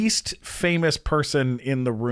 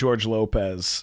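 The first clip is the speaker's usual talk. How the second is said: plain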